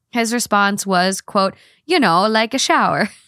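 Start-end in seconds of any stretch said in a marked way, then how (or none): 1.9-3.1 put-on made-up Italian accent. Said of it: "he speaks in made-up Italian".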